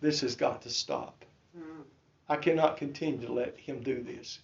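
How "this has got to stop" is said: mutter under breath, much quieter and lower. Retelling what he said during a church service, muttered under his breath. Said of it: "said under my breath".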